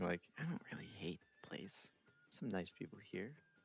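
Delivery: very soft, hushed half-whisper, barely audible. In a group role-play, a player's character speaks up, half-whispering. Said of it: "so I'm like whispering".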